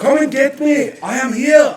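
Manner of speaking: loud, high-pitched bellow. Acting out how you answer when she is looking for you, in an Arnold voice. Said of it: "you do the Arnold".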